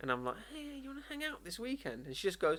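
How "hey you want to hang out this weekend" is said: voice shot way up, very high and soft, hushed. Retelling asking a woman to hang out, imitating own high-pitched voice. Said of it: "Your voice goes up three octaves".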